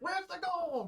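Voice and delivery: very high, yelled, halfling-style voice. Voicing a halfling who knocks a player prone: halfling yelling. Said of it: "the halfling is yelling at you".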